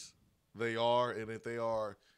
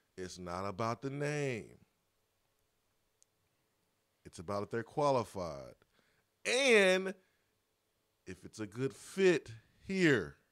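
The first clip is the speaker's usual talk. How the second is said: very slow, deliberate, drawn out word by word. A speaker addresses a group to stress an important point, talking really slow. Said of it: "I'm talking really slow".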